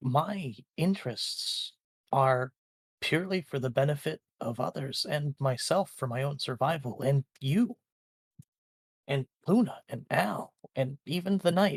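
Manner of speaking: puzzled, unsure, confused-sounding voice. A character explains his motives to a companion who won't let go; confused. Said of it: "He looks confused and says".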